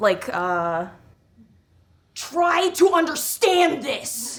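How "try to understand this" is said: very high-pitched character voice, taken slow. Answering whether a voice goes with a cosplay character: Bernard voice. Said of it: "Is there a voice that goes with Bernard?".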